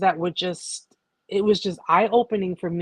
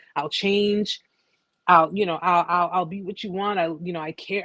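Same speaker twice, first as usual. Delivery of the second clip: usual speaking voice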